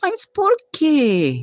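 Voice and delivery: lazy, unhurried, slow. Retelling the father's reply to an urgent plea, imitating his sluggish speech. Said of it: "e com aquela lerdeza".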